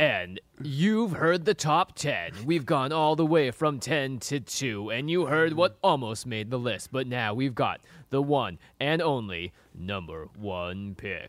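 slow, stretched-out big countdown announcer voice.

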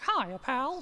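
cartoon mouse voice, pitched high. Speaker does the voice for a family at Disney: Mickey Mouse voice. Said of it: "I did the voice and I was like".

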